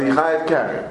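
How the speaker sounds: ordinary delivery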